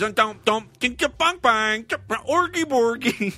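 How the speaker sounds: high, Swedish-sounding nonsense babble. Announcing Big Samuda is back and showing how she talks: Big Samuda gibberish impression. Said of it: "She talks like this".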